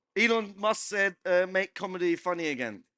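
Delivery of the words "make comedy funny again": ordinary delivery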